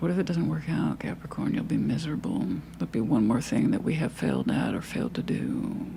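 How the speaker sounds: tempting devil voice with swooping pitch. Reading tarot for Capricorn, voicing the fear that holds them back: devil voice. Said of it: "That's my devil voice".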